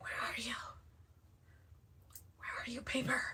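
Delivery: very quiet, breathy ASMR whisper. Searching for paper while joking about making ASMR crafting videos, in a mock ASMR whisper. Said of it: "Or should I whisper it?".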